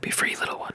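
hushed, soft whisper. Letting a caught mouse go in the game: whispering to a mouse. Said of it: "I'll whisper at it something like".

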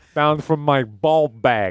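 put-on Jersey accent. Joking about ball bags in a put-on voice: jersey accent. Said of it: "What's that accent?".

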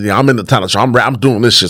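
ordinary delivery

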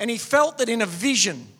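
ordinary talk

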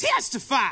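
deliberately annoying voice. Saying the word into the mic after being asked: saying it in the most annoying way. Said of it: "most annoying testify".

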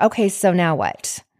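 ordinary delivery

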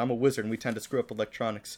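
ordinary talk

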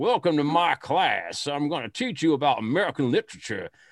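blustery, laid-on Southern drawl. Imitating a teacher welcoming his literature class, in a Foghorn Leghorn voice. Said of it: "sounded like Foghorn Leghorn".

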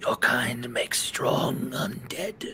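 looming, menacing, condescending undead tyrant voice. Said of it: "an undead beholder, a death tyrant. This is [name] of the Shadow Knowledge. / And he's floating".

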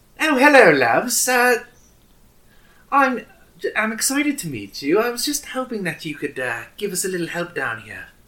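put-on British character voice. Narrating a new voice in the players' earpiece, doing a Tracer voice. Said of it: "it's Tracer from Overwatch".

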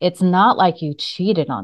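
grave and serious. Retelling repeating her point to a man who stayed silent, retelling in a serious tone. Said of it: "then I got a more serious tone".

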